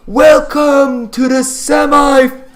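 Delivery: very high, loud, screaming arena announcer voice.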